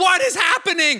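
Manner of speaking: panicked, very high, loud screaming. Retelling the moment smoke filled the living room, recreating screaming and crying. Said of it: "and I'm screaming and crying".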